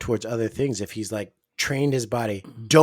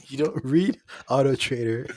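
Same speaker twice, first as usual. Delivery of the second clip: ordinary talk, nothing marked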